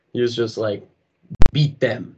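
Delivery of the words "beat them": put-on threatening, menacing voice with Russian accent. Retelling a player's answer in a documentary trailer: menacing Russian voice. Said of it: "in the most menacing Russian voice ever".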